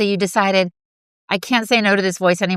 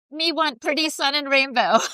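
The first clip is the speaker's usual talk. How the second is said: put-on high, babyish, childlike voice of a toddler; 7 semitones higher than usual. Teasing the other speaker about the rainbow medicine, in a regressed three-year-old voice. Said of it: "suddenly regressed to three years old".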